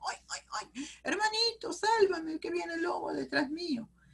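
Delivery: squeaky, tiny storybook piglet voice, very high-pitched. Demonstrating how to narrate a story for children, voicing the little pig: piglet voice. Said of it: "esos cambios de voces que a veces hacemos".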